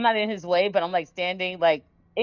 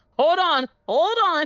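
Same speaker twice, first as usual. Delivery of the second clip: put-on very high, shrill shriek; 10 semitones higher, 4 dB louder than usual. Voicing a character who sees another grab her: character screaming. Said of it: "She's screaming".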